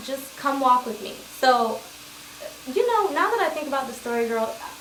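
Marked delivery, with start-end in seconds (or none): none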